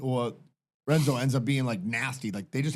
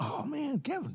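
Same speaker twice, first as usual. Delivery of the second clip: speaking higher and quieter than normal; 13 semitones higher, 6 dB quieter than usual.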